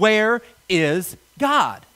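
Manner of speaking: mock severe, unbending, stern, demanding tone. Telling a story, quoting a preacher asking a boy a second time, retelling a sterner question. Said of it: "in a sterner tone".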